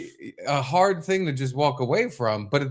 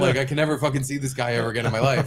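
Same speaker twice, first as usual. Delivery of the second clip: ordinary talk, nothing marked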